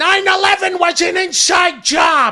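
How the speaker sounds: very high, very loud, slow, drawn-out shriek. Continuing the impression addressed to another speaker: Gilbert Gottfried voice. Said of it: "I'm Gilbert Godfrey".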